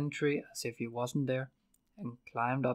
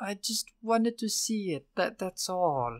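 feeble, weak, slow voice, higher pitch; 8 semitones higher, 3 dB louder than usual. Will answers the baron, continuing weakly. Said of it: "Will continued weakly".

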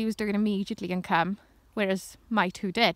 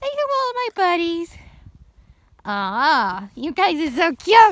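high, loud, goofy sing-song voice; 9 semitones higher, 7 dB louder than usual. Talking to the dogs while filming them, in a silly voice for the dogs. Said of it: "Sorry about the voice".

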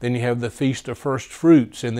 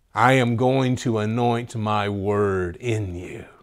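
towering, imposing voice; 2 semitones lower than usual. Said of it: "just this towering voice".

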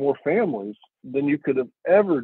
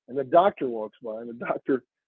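ordinary talk

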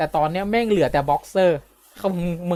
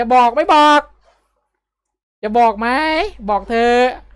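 shouting, higher pitched; 6 semitones higher, 5 dB louder than usual. Telling a story, acting out what someone shouted during the commotion, retelling a shout. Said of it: "ไอ้องค์ตะโกนออกมา".

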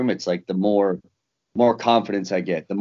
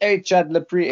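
put-on Australian accent, pitched higher; 10 semitones higher than usual. Retelling how Robert Whitaker greeted Chad: Robert Whitaker's Australian accent. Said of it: "with his Australian accent".

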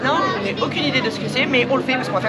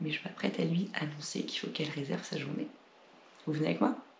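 hushed whisper, much quieter and lower; 8 semitones lower, 15 dB quieter than usual. Speaker whispers because the birthday girl is in the next room: whispering. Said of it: "Je chuchote parce qu'elle est dans la pièce".

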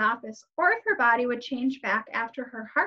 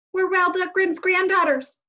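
words bursting out desperately; 7 semitones higher, 6 dB louder than usual. As a man counts down, a girl blurts out desperately. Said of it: "she blurted out desperately".

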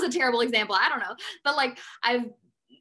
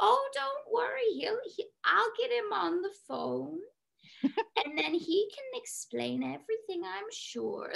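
put-on slow, creaky, very old lady character voice; 8 semitones higher, 7 dB quieter than usual. Answering a number that keeps calling her, putting on a very old lady voice. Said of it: "talking like a very old lady".

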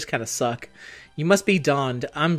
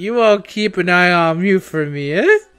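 put-on drunk voice, loud, slow drawl; 3 semitones higher, 6 dB louder than usual. Trying out a drunk voice for a quoted line: put-on drunk voice. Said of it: "Let me see if I can do a drunk voice".

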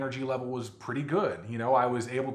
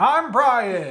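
booming, very loud announcer voice, pitched up; 8 semitones higher, 9 dB louder than usual. Brian introduces himself to open Crocs in the Kitchen, in an announcer voice. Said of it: "You're still doing the announcer voice".

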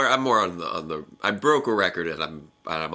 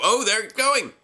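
high, loud, excited announcer-style cry. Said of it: "we can go".

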